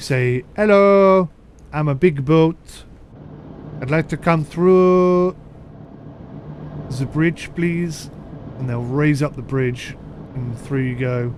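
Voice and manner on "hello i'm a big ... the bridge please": put-on slow, Welsh-sounding accent. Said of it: "in that Welsh accent".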